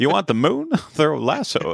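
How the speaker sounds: put-on wavering old-fashioned voice. Trading lines with the other speaker, doing a Jimmy Stewart impression. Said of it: "this awful old-timey voice".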